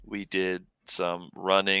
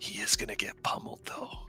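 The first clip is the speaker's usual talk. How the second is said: breathy, hushed whisper. Acting a character turning to Theo and whispering an aside: whispering. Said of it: "I turn to Theo and I kind of whisper".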